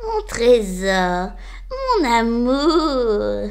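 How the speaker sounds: spiteful, venomous, very slow cackling. The aunt greets Cornebidouille as the door opens, with a venomous cackle. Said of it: "gloussa fielleusement sa tante".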